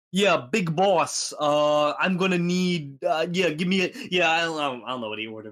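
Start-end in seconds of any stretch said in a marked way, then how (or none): 0.1-3.9 slow, high, hesitant Italian guy voice. Retelling how a customer of Italian persuasion ordered: imitating an Italian-seeming customer. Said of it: "Just talking like that".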